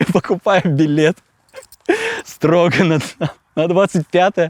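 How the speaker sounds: talking through laughter, high-pitched and swooping. Telling an interviewer what he did after a concert: laughing. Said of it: "(смеясь)".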